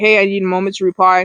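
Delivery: plain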